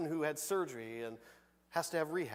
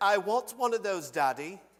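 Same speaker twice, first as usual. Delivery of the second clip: loud, put-on British accent; 4 semitones higher, 5 dB louder than usual. Retelling the Willy Wonka scene where Veruca Salt sees the golden egg, Veruca Salt British voice. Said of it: "That's my best British voice".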